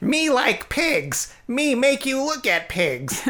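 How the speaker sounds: very high, slow, broken squeaky speech. Describing how a man talks, mimicking his speech: cheap Yoda impression. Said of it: "broken kind of like dollar store version of Yoda".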